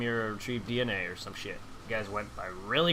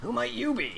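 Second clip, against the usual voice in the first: very high-pitched anime hero voice; 13 semitones higher than usual. Voicing a character asking a stranger who he is: Trunks voice. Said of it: "That's my Trunks voice".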